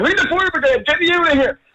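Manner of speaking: put-on very high screaming. Retelling being stuck up on a high wall: retelling own screaming. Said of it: "I started screaming".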